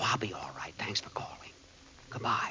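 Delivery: whispering. The boss ends a phone call while the professor sleeps nearby, whispering. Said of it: "what are you whispering about?".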